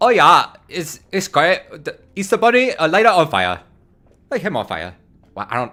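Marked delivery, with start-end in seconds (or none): 0.0-4.9 bad, fake German accent, higher, louder, slower. Teasing a listener in germany about easter bonfires, in a bad german accent. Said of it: "That's not a German accent at all".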